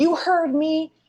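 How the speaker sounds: screaming in character. Playing a character who challenges the tower: screaming in character. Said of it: "I scream out and I say".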